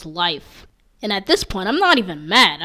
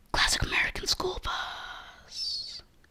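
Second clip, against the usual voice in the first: high, unvoiced whisper. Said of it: "Why am I whispering?".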